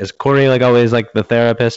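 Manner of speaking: high, loud, genuinely puzzled tone. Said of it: "they're like".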